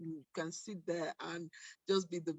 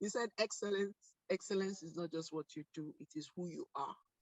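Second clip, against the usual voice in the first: ordinary talk, nothing marked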